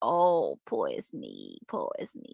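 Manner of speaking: put-on sad self-pity, slow, swooping, whining. Imitating someone who is sad as he comes in: put-on sad self-pity. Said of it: "He's got a sad heart. He's all like".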